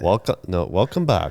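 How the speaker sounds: attempted, Swedish-sounding put-on accent. Asked to try a Finnish accent, speaker attempts it: Swedish-sounding accent. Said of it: "that's a bit more Swedish".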